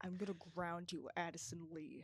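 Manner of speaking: menacing words pushed through clenched teeth. Retelling the mother's threat to ground the speaker: imitating speaking through teeth. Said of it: "through her teeth".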